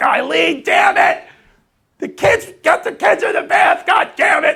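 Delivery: very high-pitched, exasperated scolding tone. Retelling a neighbor yelling at his wife about the kids: imitating a neighbor screaming. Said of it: "Just screaming".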